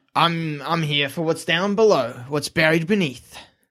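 somewhat gruff character voice. Narrating what the character says when he arrives, in a gruff voice. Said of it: "in kind of a gruff voice".

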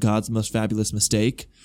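ordinary delivery

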